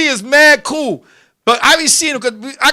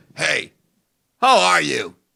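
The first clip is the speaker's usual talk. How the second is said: mock badly dubbed movie English, lower; 8 semitones lower, 4 dB quieter than usual. Retelling how he greets you on rent day: imitating dubbed kung fu movie english. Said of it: "speaking that dub English that they do in the Chinese movies".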